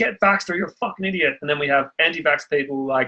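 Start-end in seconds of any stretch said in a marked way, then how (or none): 0.0-1.4 put-on screaming, higher pitch. Describing a divided society, imitating the mainstream media screaming at people. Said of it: "the mainstream media screaming at people like".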